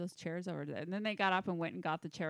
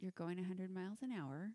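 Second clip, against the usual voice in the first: very soft speech, much quieter; 5 dB quieter than usual. Retelling what someone said during a very fast drive, imitating very soft speech. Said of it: "kind of very softly say".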